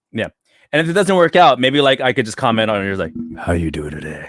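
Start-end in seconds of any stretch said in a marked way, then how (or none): 3.3-4.3 low, smooth radio host voice. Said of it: "With your radio voice?".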